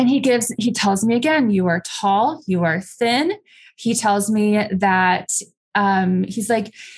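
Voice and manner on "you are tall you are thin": ordinary delivery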